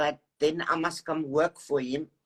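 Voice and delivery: ordinary talk, nothing marked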